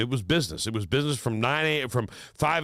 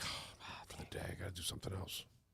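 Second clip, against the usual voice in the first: fast, hushed whisper. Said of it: "and I was like".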